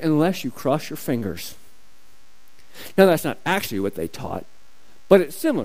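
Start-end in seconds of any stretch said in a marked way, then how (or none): 0.0-1.5 put-on mutter, lower and quieter, under breath. Acting out how they taught the oath, mock mutter under breath. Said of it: "teach kind of under their breath".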